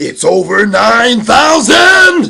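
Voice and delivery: very slow, very high, very loud drawn-out yell. Speaker doing a bit early in the morning for his video, shouting. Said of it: "I could have gotten louder".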